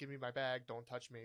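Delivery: normal talking voice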